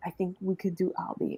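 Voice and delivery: whispered, soft, breathy, barely audible. Retelling to someone what they whispered to the speaker, imitating a whisper. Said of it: "then you whisper to me and you go".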